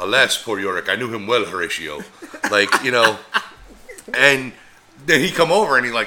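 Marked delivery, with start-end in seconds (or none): 0.0-2.0 grand, stagey, classical-actor theatrical declamation. Retelling how a street performer spoke: imitating a Shakespearean actor. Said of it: "he would do it like he was a fucking Shakespearean, Shakespearean actor".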